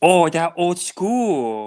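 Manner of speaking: Japanese-accented delivery. Repeating a phrase after another speaker asks: put-on japanese accent. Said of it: "Say it with the Japanese accent".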